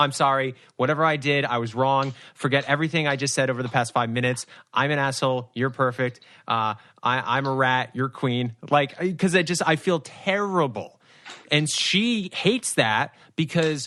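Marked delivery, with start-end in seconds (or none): none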